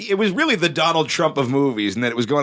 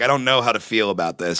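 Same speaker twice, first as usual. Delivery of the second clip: plain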